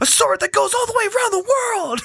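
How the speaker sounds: very high-pitched blurted outburst. Quoting a TV character's violent outburst: imitating Kimmy's deep outburst voice. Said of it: "when her voice gets all deep".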